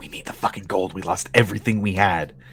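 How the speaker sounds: hushed whisper. Game master voicing a character the players overhear, whispering. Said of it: "You hear one of them whisper".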